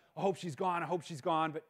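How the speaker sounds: ordinary talk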